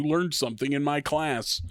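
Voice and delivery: ordinary delivery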